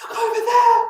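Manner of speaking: very high, strong exclaimed shout. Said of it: "He could be shouting".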